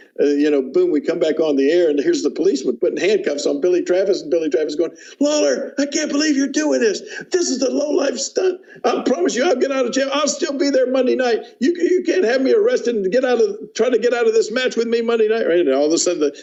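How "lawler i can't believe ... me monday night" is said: mock very high, screaming, furious raving rant. Retelling a man's rant while being handcuffed: imitating someone ranting and screaming. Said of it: "start screaming and ranting and raving".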